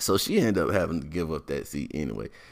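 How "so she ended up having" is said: plain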